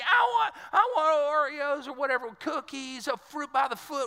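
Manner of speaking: put-on little kid's high screaming. Retelling a child demanding cookies in a grocery store: imitating a screaming child. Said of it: "He's screaming".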